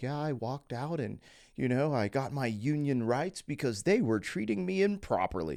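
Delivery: suddenly dead serious, straight-faced, earnest tone. Retelling how another speaker told a story: imitating someone getting serious. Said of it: "He just got all serious".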